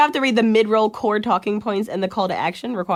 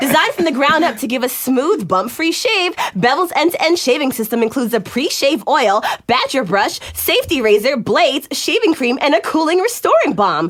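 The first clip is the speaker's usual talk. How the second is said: commercial announcer voice; 4 semitones higher than usual. Reading a shaving sponsor ad aloud: announcer voice. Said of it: "That was a total announcer voice".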